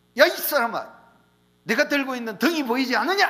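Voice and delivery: loud, high shout.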